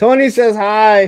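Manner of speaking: sudden, very loud, high-pitched yell. Speaker recording into a microphone, yelling. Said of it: "Sorry to yell".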